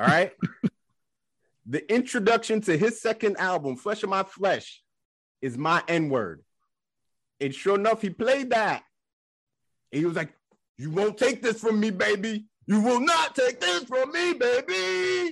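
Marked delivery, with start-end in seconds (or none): 10.8-15.3 put-on high, hyped stage performer call, "baby" stretched. Retelling what a performer said at Woodstock, speaker does an impression of him. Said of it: "That's a pretty good impression".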